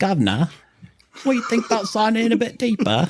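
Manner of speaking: terrible, shrill, very high put-on British accent. Redoing Padipo's line to show how it sounds, in a terrible British accent. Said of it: "Let me do that for you".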